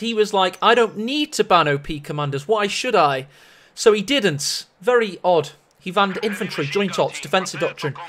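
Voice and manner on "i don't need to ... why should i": ordinary talk, nothing marked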